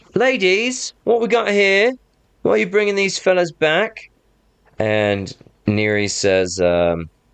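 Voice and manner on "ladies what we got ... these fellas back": calling out, voice pitched way up. Voicing a scout on a wall questioning arrivals: calling out from a wall. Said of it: "one of them calls out and says".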